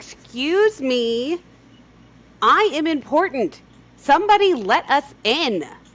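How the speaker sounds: shrill, full-volume, very high, drawn-out yell. Playing Malice calling out at a drawbridge: in-character yell. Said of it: "yell out".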